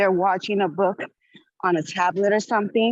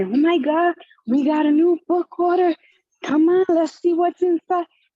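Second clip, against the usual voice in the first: put-on, high, excited, bursting with excitement; 9 semitones higher, 3 dB louder than usual. Retelling announcing a new book order to the kids: imitating own excited announcement. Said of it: "I just get them excited and say".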